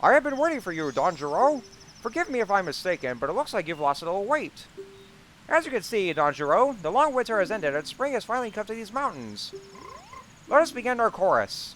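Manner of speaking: puppet frog voice, pitched very high. Speaker puts on a mask to play a frog character, Kermit the Frog impression. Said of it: "trying to do my very best to do this uh, Kermit the Frog impression".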